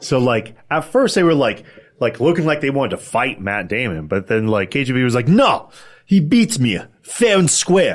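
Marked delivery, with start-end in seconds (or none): 5.3-8.0 loud, drawn-out, swooping, over-the-top bad Russian accent. Retelling a KGB character's line from a movie scene, in a mock Russian accent.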